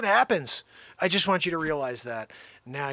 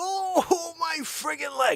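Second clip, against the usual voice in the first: drawn-out, very high, slow fake blubbering; 12 semitones higher than usual. Acting out a run-over taxi fare's complaint: mock crying. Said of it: "You're crying".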